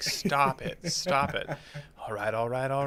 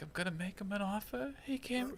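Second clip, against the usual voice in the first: soft, very quiet voice, pitched up, barely above hush; 7 semitones higher, 11 dB quieter than usual. Trying a Godfather line in a softer voice: softer Brando voice. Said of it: "a softer voice".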